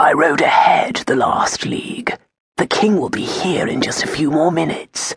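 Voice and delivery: hushed, quiet, murmured voice. Narrating Hugo's words to his good friend Lawrence after their embrace: hushed tone. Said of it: "In a hushed tone".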